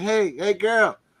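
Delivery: put-on Ethiopian accent, pitched very high. Retelling how an older man called out to a girl: imitating an Ethiopian accent. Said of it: "he's got his accent".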